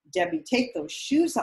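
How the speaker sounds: high-pitched, urgent, loud screaming. Retelling being told from ringside to take off high heels: imitating Patty Merrill screaming. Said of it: "screaming at me from ringside".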